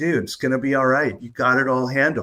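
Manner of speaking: kind, friendly, encouraging tone. Retelling how one talks to oneself: imitating a kind best-friend voice. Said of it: "when I talk to myself with a kind voice, my best friend voice".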